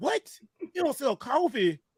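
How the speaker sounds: too-loud, high-pitched burst of disbelief. Retelling ordering at a coffee counter: retelling a loud outburst. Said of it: "I'm sorry, that's too loud".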